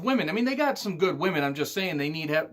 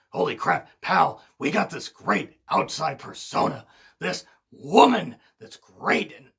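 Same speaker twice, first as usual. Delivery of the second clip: throat-straining put-on bossy voice, pushed hard; 4 dB louder than usual. Retelling what the company owner thought of a new signing: Vince McMahon impression. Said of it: "I'm gonna stop trying to do the Vince impression".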